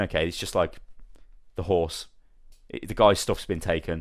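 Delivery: ordinary delivery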